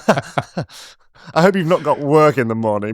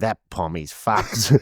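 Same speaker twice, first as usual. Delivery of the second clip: low, private grumbling mutter under the breath; 5 semitones lower, 5 dB quieter than usual. Retelling what the boat driver said under his breath: imitating muttering under breath. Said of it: "you heard him under his breath go".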